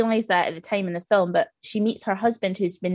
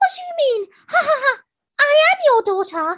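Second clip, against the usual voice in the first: put-on high, squeaky little-girl voice; 5 dB louder than usual. Retelling a film scene where the old woman answers in her daughter's voice. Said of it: "in her daughter's voice".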